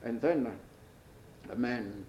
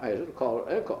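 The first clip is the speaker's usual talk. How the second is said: normal talking voice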